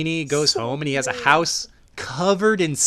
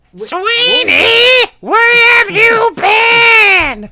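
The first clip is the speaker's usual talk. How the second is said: very high, very slow, shrill, furious metallic robot voice; 13 dB louder than usual. Giving an example of the wife's voice in a movie: angry robotic electrolarynx voice. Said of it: "Could you give us an example?".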